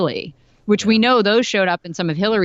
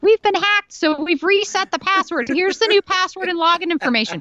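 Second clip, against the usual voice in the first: very high, ditzy, airheaded woman voice; 12 semitones higher than usual. Retelling an email sent after a hack by a woman, mocking woman's voice. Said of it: "That's why I'm doing this voice".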